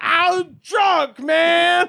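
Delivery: put-on very high, shrill shouted outburst. Retelling what the driver who got out of the crashed car said: imitating someone yelling. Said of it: "he's literally just yells like".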